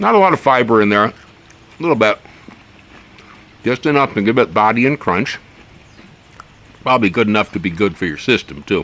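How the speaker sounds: speaking with a full mouth, chewing while talking. Describing a vegetable while eating it, talking while chewing. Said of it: "I'm going to have to stop chewing if I want to keep talking".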